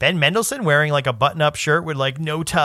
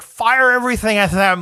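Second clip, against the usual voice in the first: put-on villain voice from throat's back, higher, louder; 7 semitones higher, 4 dB louder than usual. Trying to imitate a Star Wars villain, the speaker attempts a throaty villain voice. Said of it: "his tongue is upside down".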